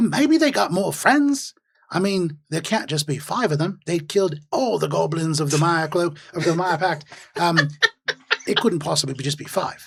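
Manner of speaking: speaking in a goblin character voice. Voicing another goblin answering outside the cave: goblin voice. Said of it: "you hear another goblin come in".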